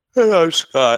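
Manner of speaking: said through a yawn. Introducing himself at the start of a podcast episode, yawning. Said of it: "Sorry, that was a yawn".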